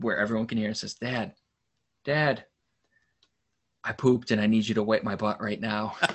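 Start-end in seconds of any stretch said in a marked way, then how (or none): 0.9-6.0 put-on straightforward, plain little-kid voice. Retelling his son interrupting a meeting: imitating someone speaking quietly. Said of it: "walks up real quietly".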